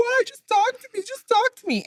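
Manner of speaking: very high, weepy, drawn out crying plea. Retelling a neighbor following her boyfriend down the street, imitating a crying plea.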